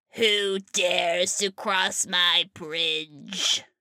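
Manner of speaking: calling out in troll voice. Telling the Billy Goats Gruff story, troll under the bridge crying out. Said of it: "the troll underneath the bridge cries out".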